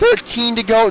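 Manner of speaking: voice breaking mid-phrase, jumping high. Commentating a race as the laps count down, with a voice crack. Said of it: "That was a horrible voice crack".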